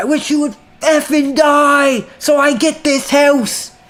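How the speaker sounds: high-pitched shrieking scream. Retelling own words screamed at mom: imitating own screaming. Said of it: "I'm always screaming at my mom".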